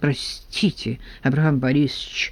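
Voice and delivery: muttering. Reading Smyshlyaev's reply to Abram Borisovich, muttered. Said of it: "пробормотал Смышляев".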